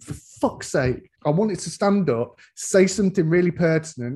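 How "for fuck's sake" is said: low, hushed muttering under the breath. Retelling own reaction during a Thor film: imitating muttering under breath. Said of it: "under my breath going".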